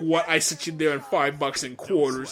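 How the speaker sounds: plain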